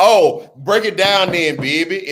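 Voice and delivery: best-effort, put-on New Orleans accent. Thanking Bria and repeating her phrase in a best New Orleans accent. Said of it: "In my best New Orleans voice".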